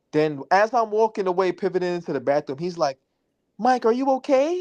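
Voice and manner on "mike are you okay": put-on prissy, high, girly feminine voice. Retelling how a guy asked him if he was okay, imitating a feminine voice. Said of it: "like he's a female or some shit".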